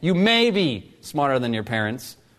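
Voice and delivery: may punched hard with heavy stress. Making a point to listeners, stress on the word may. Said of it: "Emphasis on the word may".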